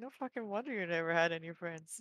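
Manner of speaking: mumbled quietly under the breath. A game master voices a character muttering at the party, mumbled under her breath. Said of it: "Kunlag will mumble like under her breath".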